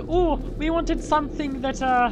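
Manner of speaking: high, slow mock Jamaican accent.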